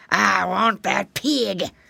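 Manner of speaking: harsh, rough, rasping alligator-like cry. A narrator voices an alligator advancing on a pig: rasping voice. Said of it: "he cried in his rasping voice".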